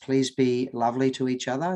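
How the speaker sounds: ordinary delivery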